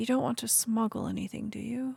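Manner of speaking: confidential, quiet tone. Though only two people are present, she asks in a lowered voice. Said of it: "lowering her voice".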